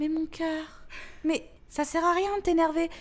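put-on high, sugary, honeyed, soothing little voice. A daughter quotes her mother soothing her when irritated: imitating mother's honeyed voice. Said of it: "avec sa petite voix toute mielleuse".

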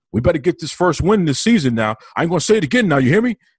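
acted high-pitched screaming. Retelling a huddle where a player screams at his teammates: imitating Michael Jordan screaming at teammates. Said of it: "screaming at his teammates".

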